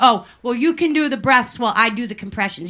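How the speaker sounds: ordinary delivery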